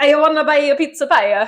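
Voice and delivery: high-pitched fake Italian accent. Recounting a scene with characters in fake mustaches, the speaker does a fake Italian Mario accent. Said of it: "they're talking like Mario".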